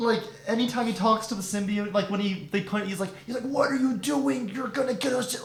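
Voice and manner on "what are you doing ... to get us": silly put-on movie-star shtick voice, pitched higher. Quoting an actor talking to the symbiote: Tom Hardy's stupid shtick voice. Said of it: "his stupid shtick with this".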